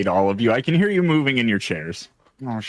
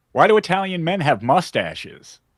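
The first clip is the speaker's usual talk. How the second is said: over-the-top vaudeville-style delivery, pitched up; 5 semitones higher than usual. Retelling a joke again after being told to retry: over the top joke delivery. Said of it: "Take it e-, take it down a peg".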